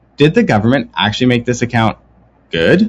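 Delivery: surprised, disbelieving, caught-off-guard amazement. Asking whether the government really made the new savings account good: surprised. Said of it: "You sound surprised".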